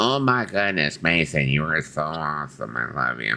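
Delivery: low, slow robotic voice. Imitating a robot companion named Groovy Lisa: Groovy Lisa robot voice. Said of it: "talks like Lisa".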